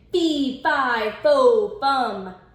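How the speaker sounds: horrible giant bawling voice, very slow and drawn out. Reading a fairy tale, the giant heard by the wolf on the beanstalk: horrible giant voice bawling. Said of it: "horrible giant voice bawling".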